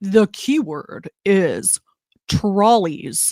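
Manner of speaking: very slow, deep, low baritone delivery. Announcing the keyword, doing an impression of Ethan's deep baritone. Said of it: "try to do my best Ethan impersonation".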